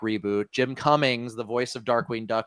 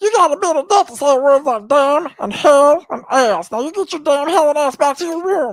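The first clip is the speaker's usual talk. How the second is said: very high, loud, shrill cartoon squeal; 9 dB louder than usual. Showing the others a pretty good Meatwad impression. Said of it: "I actually do a pretty good Meatwad impression".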